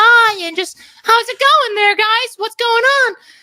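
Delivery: put-on very high-pitched cartoon kid voice. Explaining vocal technique, demonstrating how to make a Bart Simpson voice. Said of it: "like a cartoon kid voice".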